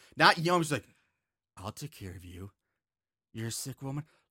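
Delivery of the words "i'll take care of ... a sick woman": very low, very soft, dark, scary, menacing voice. Retelling a film scene where Abby turns on Mother: imitating a scary, creepy voice. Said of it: "scary, creepy".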